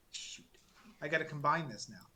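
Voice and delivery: ordinary talk, nothing marked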